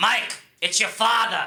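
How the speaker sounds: put-on Long Island New York accent. Describing his father's voicemails, the speaker imitates his dad's New York accent. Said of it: "It's like this".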